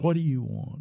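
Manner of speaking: furious, hostile, unwelcoming, very angry tone. Retelling a man on crutches answering a pastor at his door, retelling a very angry demand. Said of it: "asked in a very angry voice".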